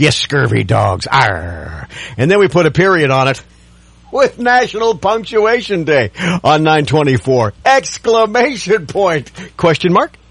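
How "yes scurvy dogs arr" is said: gruff, low, rough pirate growl with long arr. Radio ad announcer marking International Talk Like a Pirate Day: pirate voice. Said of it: "Talk Like a Pirate Day".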